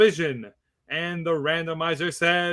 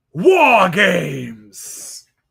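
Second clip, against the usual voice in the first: loud, booming announcer proclamation with swinging pitch; 2 semitones higher, 8 dB louder than usual. Predicting a wrestling storyline, saying the catchphrase as William Regal would. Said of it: "as William Regal would say".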